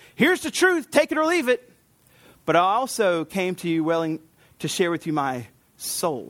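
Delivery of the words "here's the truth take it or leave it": much higher pitched, pushy know-it-all voice. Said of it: "I wasn't just the big truth teller".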